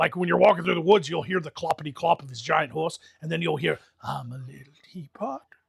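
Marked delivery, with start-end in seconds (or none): 4.0-5.4 slow, eerie, creepy hushed whisper. Describing a creepy monster in the woods: whispering headless horseman. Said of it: "you can hear him whisper it".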